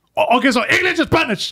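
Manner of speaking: fed-up, irritated voice. Retelling a story about ordering a number three: imitating a pissed-off guy. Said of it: "he was just pissed".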